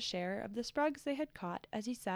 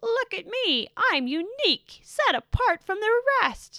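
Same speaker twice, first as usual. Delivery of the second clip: piercing, very high, very loud shout; 10 semitones higher, 9 dB louder than usual. A voice suddenly interrupts the peace, loud and shrill. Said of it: "loud and shrill".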